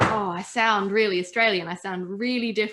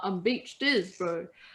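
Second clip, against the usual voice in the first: jokey, put-on comedy New Zealand kiwi accent; 4 dB quieter than usual. Quoting a comedy catchphrase people were repeating: imitating a New Zealand accent. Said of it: "a New Zealand accent".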